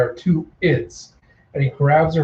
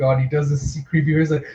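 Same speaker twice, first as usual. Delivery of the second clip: ordinary talk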